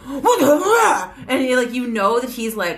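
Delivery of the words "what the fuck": play-acted mad caveman growl, growly and pitched up. Retelling how the caveman dad in The Croods reacts: growly, mad caveman dad from The Croods. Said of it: "really growly and, like, mad really fast".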